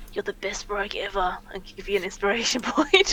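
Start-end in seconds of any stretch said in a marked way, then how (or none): 0.1-1.4 whispering. Narrating a game, speaking as a character to a player's rogue, whisper. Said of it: "whisper to you".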